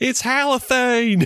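put-on, very high, piercing shrieked scream. Retelling a movie scene where a farmer sees a hose: imitating a farmer screaming. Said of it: "one of the farmers just screams".

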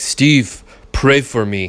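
slow, plodding caveman-like voice. Retelling what a man with a hurt knee said to him, in a caveman voice. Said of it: "he kind of sounds like a caveman".

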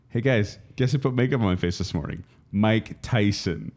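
ordinary talk, nothing marked

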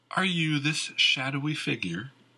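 slightly amused. A woman responds to a man's account of rumors, with a little mirth. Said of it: "with a little mirth in her voice".

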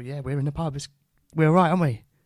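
loud, cheery, chummy voice. Acting out raising a pint in the pub: mock-cheery smiling toast. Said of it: "smiling, and sort of just lift your pint up and go".

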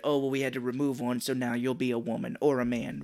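ordinary talk, nothing marked

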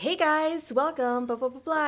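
high, fake-happy commercial announcer voice. Explaining how commercial acting differs from film, in a high fake-happy commercial voice. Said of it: "And then your voice gets higher".

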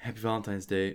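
play-acted shy, bashful, sheepish, awkward delivery. Retelling how Jacob says a greeting: bashful Jacob voice. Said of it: "He was all bashful".

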